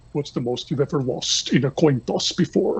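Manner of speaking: soft, threatening villain voice. Imitating a villain line as a casting pick: quiet menacing Javier Bardem voice. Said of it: "he's very quiet, and he's very menacing".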